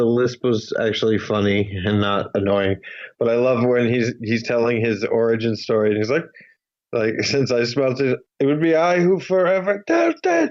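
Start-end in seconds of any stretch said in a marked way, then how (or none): 7.2-10.5 high scream in a character voice, pitch swinging. Recounting a character's origin-story line from a film: imitating Pee-wee Herman screaming. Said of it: "he screams sort of in the Pee Wee voice".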